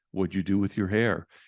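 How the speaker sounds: put-on condescending voice. Describing to a listener how a mother's remark sounds, imitating her condescending tone. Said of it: "With that voice".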